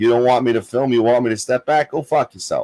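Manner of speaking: ordinary delivery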